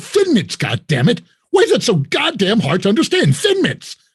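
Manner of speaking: mock pissed-off, exasperated, high, loud, furious ranting. Speaker retells insisting on Thin Mints to people staring back: retelling an angry outburst. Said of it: "I'm so pissed off".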